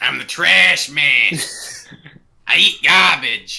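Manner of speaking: very slow comic voice, every word drawn out. Answering a request for the best impersonation: Danny DeVito impression. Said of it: "the best Danny DeVito impersonation".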